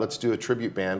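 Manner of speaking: ordinary delivery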